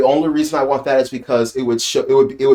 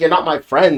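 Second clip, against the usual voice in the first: put-on angry, indignant voice; 3 semitones higher than usual. Retelling a scene where Nami answers Kaya: imitating Nami angrily. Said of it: "super, like, indignant and, like, a-, aggressive and, like, angry about it".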